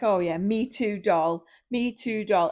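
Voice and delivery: slow, condescending, talking-down tone. Retelling what a reality show contestant said to a partner: imitating a patronizing tone. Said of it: "she's saying it to be patronizing".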